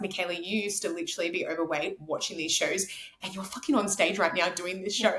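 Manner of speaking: ordinary talk, nothing marked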